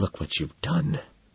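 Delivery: urgent, desperate, very quiet whisper. Narrator to a wailing companion as a security guard approaches: desperate whisper. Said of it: "I whisper desperately".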